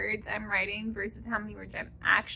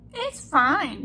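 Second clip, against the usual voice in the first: put-on very uncomfortable, pitched-up voice; 5 semitones higher, 7 dB louder than usual. Saying a hard, losing month is fine, in the most uncomfortable voice. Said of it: "she says in the most uncomfortable voice".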